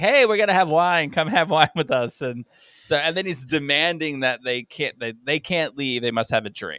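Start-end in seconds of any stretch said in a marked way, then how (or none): 0.0-2.2 play-acted loud hollering. Retelling a comedy scene where a character calls others for wine: imitating a character yelling. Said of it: "he's just yelling to say".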